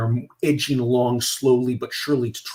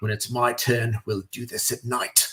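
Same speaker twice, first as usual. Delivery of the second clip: put-on British accent; 3 dB quieter than usual. Retelling a commander's remark to his brigadier, in a Simmons British accent. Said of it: "Simmons with a British accent".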